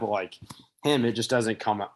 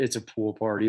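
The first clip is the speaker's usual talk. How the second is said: usual speaking voice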